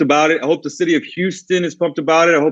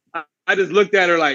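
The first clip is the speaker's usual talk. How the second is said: ordinary talk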